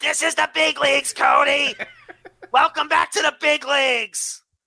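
screeching puppet voice. Quoting a wrestling-style welcome to Cody, as Seth Rollins screeching in Muppet voice. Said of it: "in his Muppet voice screeches".

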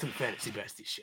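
very quiet, whispered hero voice, hardly above breath. Podcast co-host launches the show intro, in a Batman voice. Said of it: "you talk like Batman".

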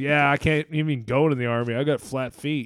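ordinary talk

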